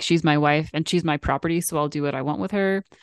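plain

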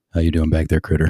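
acted low fatherly man's voice. Retelling a man calling the speaker by a childhood nickname, deep fatherly voice. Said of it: "in his deep fatherly voice".

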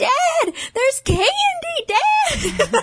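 mock high-pitched child yell, drawn out. Describing an old home video of themself as a kid: retelling a childhood yell to dad. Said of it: "I'm like yelling to my dad".

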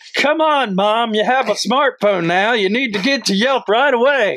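put-on rural Mississippi accent. Playing a guy talking to his mom, in a Mississippi redneck accent. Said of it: "He's like Mississippi".

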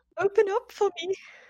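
put-on very high, overly emotional pleading. Retelling a neighbour begging at a door: imitating an overly emotional plea. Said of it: "You're way too emotional".

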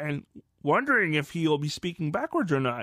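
put-on alien creature voice. Podcaster talking about Grogu in Season 3, in a terrible Yoda voice. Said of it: "terrible Yoda voice".

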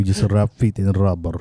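put-on, fake Russian accent. Doing a comic bit with another speaker, in a mock Russian accent. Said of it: "Russian Filipino?".

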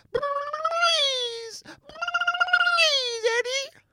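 very high, very loud squealing cartoon voice, please stretched out. Showing Michael your impression by pleading with Eddie, Roger Rabbit impression. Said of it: "That's my Roger Rabbit impression".

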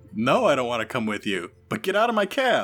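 loud, swooping, irate, indignant alien voice shout. Storyteller voicing the Keldor taxi driver running toward the players in his taxi: Keldor taxi driver voice. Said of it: "And I think I'm going to flip a dark side over because the Keldor taxi driver sees that you are in his taxi and it has started and he's running towards you now. / And I think I'm going to flip a dark".

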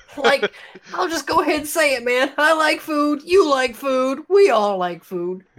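goofy cartoon slacker voice, pushed very high. Podcast host on the day before Halloween; Shaggy voice. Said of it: "I'm doing the shaggy voice".

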